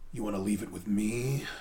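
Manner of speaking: low, quiet, intimidating menace. Describing a character's scene, quoting his reply in a mock super-intimidating way. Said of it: "super intimidating".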